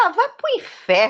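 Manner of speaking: high, rude, angry, fed-up voice. Retelling telling a man off during an argument: imitating her own angry retort. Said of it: "eu mandei o homem pro inferno".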